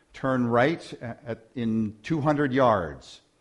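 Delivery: ordinary delivery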